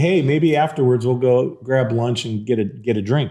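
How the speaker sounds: ordinary talk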